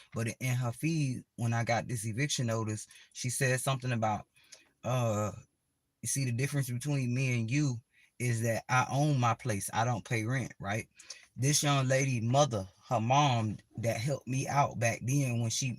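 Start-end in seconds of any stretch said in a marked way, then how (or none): none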